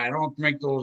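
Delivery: ordinary delivery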